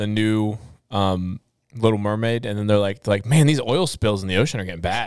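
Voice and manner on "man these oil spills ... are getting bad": ordinary talk, nothing marked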